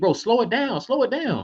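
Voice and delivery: fake high yell. Retelling watching a fast break at home: retelling yelling at the TV. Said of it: "the whole time I'm yelling at T V".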